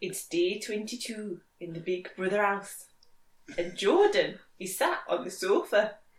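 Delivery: put-on Newcastle Geordie accent. Asked by another speaker to say a big brother line, in a geordie accent. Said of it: "in a Geordie accent".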